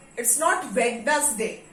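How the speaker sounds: "not" stressed and drawn out very slowly.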